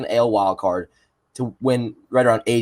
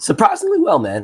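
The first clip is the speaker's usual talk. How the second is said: cracking voice, higher pitch; 12 semitones higher than usual. Answering how the night is going: voice cracking. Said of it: "my voice is cracked".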